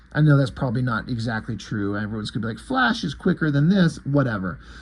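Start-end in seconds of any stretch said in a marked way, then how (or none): none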